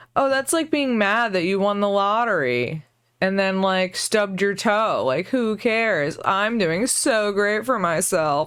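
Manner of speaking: snobbish, snooty, boastful upper-class rich-person voice. Mocking how he brags about himself, as a mock snooty rich person. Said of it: "that's my impression of, like, a rich person snooty laugh".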